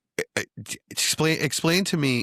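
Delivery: high-pitched stammering, tripping over and restarting. Starting to ask the others a question, stuttering. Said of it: "I'm stuttering now".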